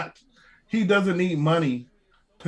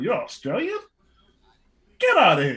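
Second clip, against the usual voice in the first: swooping animated voice with wide pitch swings; 2 semitones higher, 3 dB louder than usual. Imagining how Vince McMahon fired the wrestler: imitating Vince McMahon. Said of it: "He was like".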